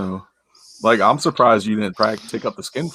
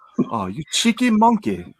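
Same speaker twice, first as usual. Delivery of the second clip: exaggerated put-on British accent, pitched up; 7 semitones higher than usual. Asked to show off a British accent: British accent. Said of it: "let's hear your uh, British accent".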